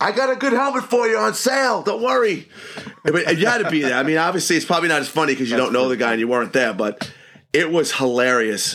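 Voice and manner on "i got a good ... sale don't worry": mock very high shouted yell. Telling a hockey story about a guy on the bench: retelling Mike Anderson's scream. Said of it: "he screams out".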